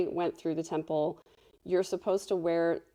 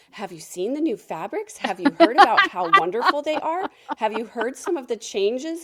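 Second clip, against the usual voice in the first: put-on thrilled little old lady, high, loud, swooping, gushing; 5 semitones higher, 6 dB louder than usual. Retelling what the little old ladies in the distribution center said, imitating excited old ladies. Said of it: "the little old ladies in the distribution center were so excited".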